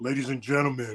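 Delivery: put-on serious low voice. Imitating another speaker's serious voice: imitating Sean Mason's serious voice. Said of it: "He's like".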